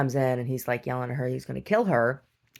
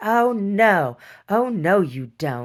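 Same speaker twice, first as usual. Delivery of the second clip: mock agitated, indignant, high, loud, very drawn-out; 6 semitones higher, 5 dB louder than usual. Recounting how a woman reacted to the speaker's accusation, retelling her flipping out. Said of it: "she flipped out".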